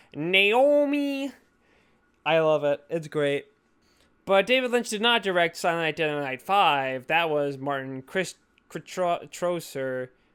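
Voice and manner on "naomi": high word stretched out very long. Retelling an actress doing an impression of the director. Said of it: "how she says Naomi in the David Lynch impression".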